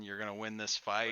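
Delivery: ordinary talk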